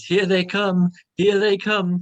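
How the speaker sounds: loud, high, taunting speech through laughter. Narrating a scene, the speaker voices an unseen voice: laughing while talking. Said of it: "The voice starts laughing and says".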